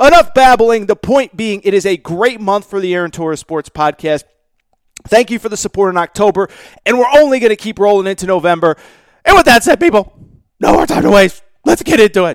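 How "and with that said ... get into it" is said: loud yelling and screaming. A podcast host addresses listeners to start the show, yelling. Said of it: "I'm yelling and screaming".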